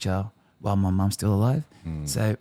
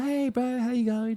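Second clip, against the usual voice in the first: put-on, very high, breezy, cool casual tone. Retelling a phone call where the sister acted so cool: imitating someone acting cool. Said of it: "She was acting so cool".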